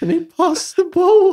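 play-acted very high, loud tearful blubbering, near tears. Describing a player explaining football in a video: imitating someone crying. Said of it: "and then he's like tearing up".

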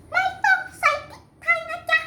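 put-on child's voice, high-pitched and swooping.

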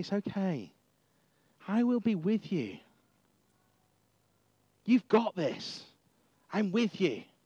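mock gentle, caring, reassuring fatherly tone. Acting out God reassuring a doubtful Moses: caring, fatherly tone. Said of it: "in a really caring, fatherly sort of way".

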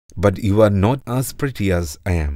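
plain reading voice

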